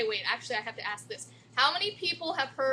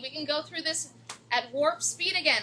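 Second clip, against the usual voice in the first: ordinary talk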